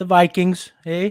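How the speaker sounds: put-on Canadian accent. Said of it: "I don't know why I always go Cannon".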